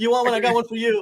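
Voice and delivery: put-on high, pushy voice.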